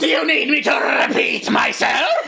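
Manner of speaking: snarling deranged voice. A voice in the player's head answers the confused player: snarling psychotic voice. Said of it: "this snarling, psychotic voice saying".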